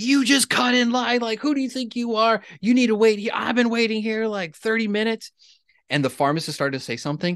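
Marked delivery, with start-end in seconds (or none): 0.0-5.3 very high, shrill, acted-out yell. Retelling a woman in a vaccine line accusing the speaker of cutting, retelling a woman yelling. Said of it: "a woman just started yelling at me".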